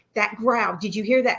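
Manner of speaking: mock-panicked voice. Retelling what you said to your companion while freaking out, retelling panicked words. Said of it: "And I'm like panicking".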